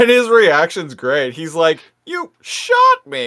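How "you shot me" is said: mock shocked, very high, stunned, raised voice. Retelling a character's reaction after being shot: imitating a raised, stunned voice. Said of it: "He even raises his voice as he says it".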